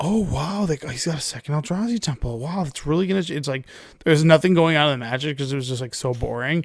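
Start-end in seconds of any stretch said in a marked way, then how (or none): 0.0-3.2 fake, forced, enthusiastic play-by-play commentator voice. Imitating commentators during boring mirror matches: mock fake-enthusiastic commentator. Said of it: "this fake enthusiasm".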